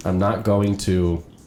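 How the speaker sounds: usual speaking voice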